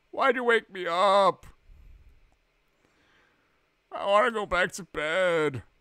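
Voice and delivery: irritated, annoyed ghost voice. A gamer speaks for a ghost in the game, mock-annoyed ghost voice. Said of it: "You just sounded kind of annoyed".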